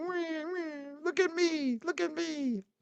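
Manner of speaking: very high, whiny, drawn-out crybaby whine. Mocking a chatter who cries a lot: mock crybaby whining. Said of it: "they cry a lot".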